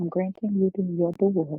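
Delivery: plain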